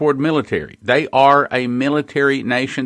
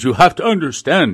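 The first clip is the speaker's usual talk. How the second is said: put-on Russian accent, higher pitch; 3 semitones higher than usual. Retelling what a Russian officer told him at lunch: Stanislav Lunev Russian accent. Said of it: "in his German or his Russian accent".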